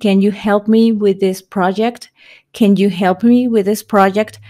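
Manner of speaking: ordinary talk, nothing marked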